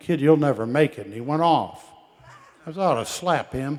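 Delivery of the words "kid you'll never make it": mock snotty, mouthy, loud jeering tone. Retelling what a mouthy guy named Earl said to him: imitating Earl's snotty tone. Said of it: "said real snotty like".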